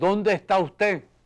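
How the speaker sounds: booming, high, thunderous voice. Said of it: "la voz de trueno de Leoni".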